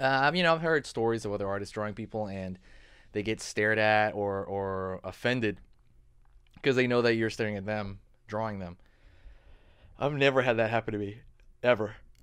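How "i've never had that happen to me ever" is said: speaking through a yawn. Artist talking to viewers about drawing people, yawning. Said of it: "Excuse me, I'm yawning".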